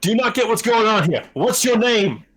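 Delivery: loud, slightly high. Asking another player their name in character: a bit loud. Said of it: "You were a bit loud".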